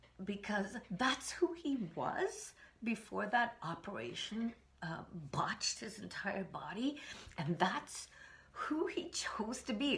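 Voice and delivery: slow, deeply moved, emotional, feeling every word. Remembering a man who is no longer alive, getting emotional. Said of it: "I can't believe I'm getting so emotional".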